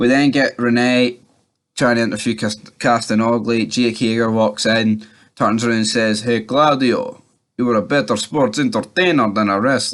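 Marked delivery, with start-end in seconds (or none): 6.2-9.9 put-on European accent. Recapping a wrestling show, quoting one wrestler taunting another, in a put-on Cesaro accent. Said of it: "Don't know why I'm putting on a".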